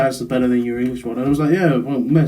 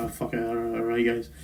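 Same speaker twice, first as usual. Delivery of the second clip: careless, offhand put-on Scottish accent; 3 semitones lower, 12 dB quieter than usual. Retelling what they said the day they switched accents at school: Scottish accent. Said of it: "I just spoke like this one day".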